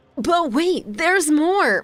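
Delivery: high, drawn-out TV infomercial announcer voice. Sharing news about an upcoming chocolate expo, sounding like a commercial. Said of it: "I know I sound like a commercial".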